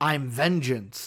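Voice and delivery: deep, dropped-down hero voice. Speaker comparing two actors' Batman voices quotes the new one, deep Batman voice. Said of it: "is it a deeper voice".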